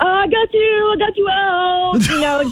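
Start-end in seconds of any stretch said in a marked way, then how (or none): 0.0-1.0 put-on yell, much higher. Recounting a man hurling balls at people in a game, retelling his yell. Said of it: "he was yelling".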